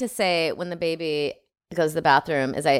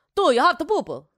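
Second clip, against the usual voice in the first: mock, put-on fake Italian accent; 11 semitones higher than usual. Taking turns doing accents, the speaker is asked for an Italian one: put-on Italian accent. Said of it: "How about an Italian?".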